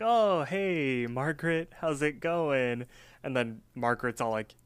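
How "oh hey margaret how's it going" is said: very slow, casual, acted cool delivery. Retelling a cartoon scene, imitating Mordecai acting cool. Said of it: "Mordecai acts all cool".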